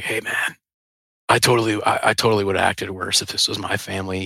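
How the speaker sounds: whispered voice. Retelling what a cop said after coming over: imitating a whisper. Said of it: "whispered in my ear".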